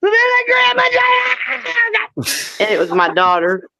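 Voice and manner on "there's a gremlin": high-pitched, terrified shriek. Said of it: "I screamed it".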